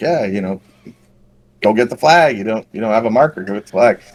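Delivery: ordinary delivery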